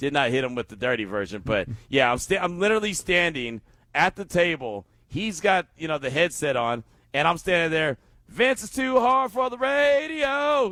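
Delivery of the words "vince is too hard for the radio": play-acted very high, loud yell, radio stretched out. Retelling crashing the morning show at the table, retelling a shout as loud as possible. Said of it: "I was as loud as possible".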